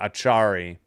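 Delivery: Achari with the middle syllable char stressed. Repeating a name after being told its stress, stress on char in Achari. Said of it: "it's emphasis on the middle, on the char".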